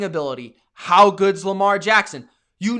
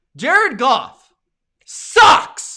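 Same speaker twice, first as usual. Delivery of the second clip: loud, pitched-up, blunt shout; 6 semitones higher, 5 dB louder than usual. Complaining about a quarterback's game after a loss: loud. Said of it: "Maybe that was a little loud".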